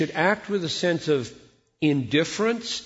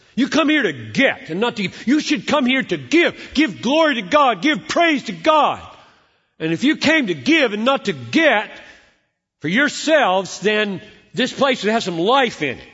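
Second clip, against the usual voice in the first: loud, high, scolding preacher voice; 6 semitones higher, 7 dB louder than usual. Quoting a pastor's words to his congregation, imitating a scolding pastor. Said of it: "just the very tone of voice, of course, is stupid".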